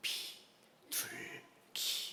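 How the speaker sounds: tiny, very soft, barely audible whisper. Retelling a grandmother's answer to the bank clerk: very quiet voice. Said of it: "아주 작은 목소리로".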